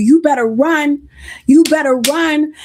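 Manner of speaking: ordinary talk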